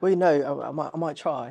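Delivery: attempted put-on British accent. Answering whether the role will bring an accent: put-on british accent. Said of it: "he goes right into it".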